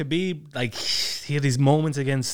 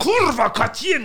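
scream in a much higher voice; 11 semitones higher, 4 dB louder than usual. Speaker recalling yelling Polish swear words to a friend: retelling a scream. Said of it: "I was just screaming".

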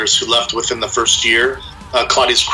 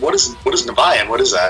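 ordinary talk, nothing marked

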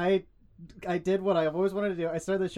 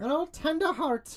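very high, jokey, put-on Irish brogue; 10 semitones higher than usual. Introducing himself on the podcast, joking about tending bar, in an irish accent. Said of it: "That's my Irish accent".

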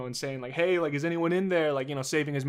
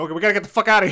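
mock mild panic, higher and louder; 5 semitones higher, 9 dB louder than usual. Acting out people in a studio: imitating mild panic. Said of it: "actually, like, mildly panicking".

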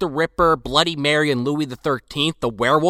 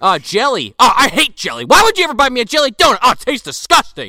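raised, pitched-up, petty complaining voice; 8 semitones higher, 5 dB louder than usual. Retelling a cop griping to his partner: imitating a complaining cop. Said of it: "he is just bitching and complaining".

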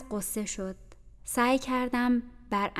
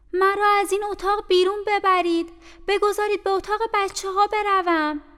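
shrill, very high, loud, frightened cry; 10 semitones higher, 7 dB louder than usual. As two people enter her room, the narrator says loudly. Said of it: "من با صدای بلند گفتم".

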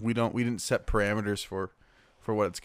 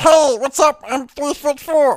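put-on small-person voice, much higher, louder; 12 dB louder than usual. Hosts invent a giraffe named Max who introduces himself; Max's small people voice. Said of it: "That's our small people voice".

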